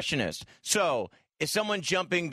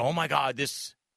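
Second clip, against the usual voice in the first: ordinary talk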